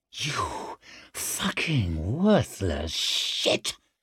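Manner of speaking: whispered, contemptuous, scornful hiss. Reading a novel, she turns on Leo, hissing. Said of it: "she hissed".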